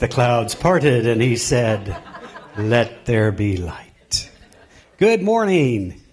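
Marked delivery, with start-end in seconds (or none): 2.6-4.3 big put-on voice, lower and slower. Greeting an audience, the speaker acts out what God said: booming God voice. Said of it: "Big voice, God voice".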